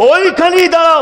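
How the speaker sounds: high, loud calling out.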